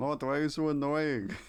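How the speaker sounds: awkward, high, loud attempt at a royal voice. Playing both characters and addressing Mort, doing a King Julian impression. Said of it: "I can't do a King Julian impression".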